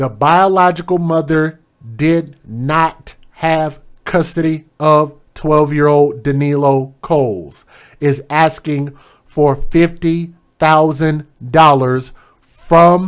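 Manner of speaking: very slow, deliberate, every word set down carefully. Reporting a story, restarting a sentence: very slow, deliberate. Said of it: "let me say this very slowly".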